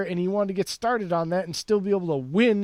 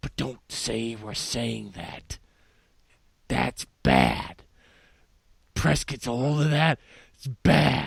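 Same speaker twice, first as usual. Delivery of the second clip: eerie, very low, creepy voice; 8 semitones lower than usual. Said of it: "you have a creepy voice right now".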